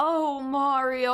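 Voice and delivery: put-on seductive pillow-talk voice, sultry afterglow. Speaker comments on a game character's voice in this version; imitating a sultry afterglow voice. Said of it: "That's like fucking afterglow voice".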